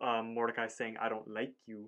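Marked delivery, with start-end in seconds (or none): none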